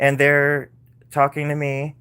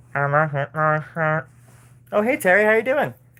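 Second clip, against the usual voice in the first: ordinary delivery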